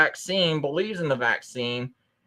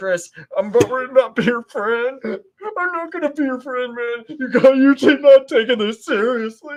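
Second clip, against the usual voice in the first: mock crying, higher and louder; 9 semitones higher, 5 dB louder than usual. Retelling what a scared friend said: imitating a friend crying. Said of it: "He was crying, going".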